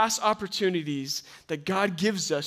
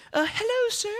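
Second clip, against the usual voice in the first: put-on old lady voice, much higher. Retelling a woman behind him greeting him, in an old lady voice. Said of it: "I don't know how to do old lady voice".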